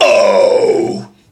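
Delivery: false chord scream. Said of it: "You can hear it".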